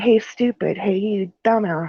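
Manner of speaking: slow, taunting, jeering delivery. Retelling how the friend's mom taunted the ghost: imitating someone taunting. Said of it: "calling it names".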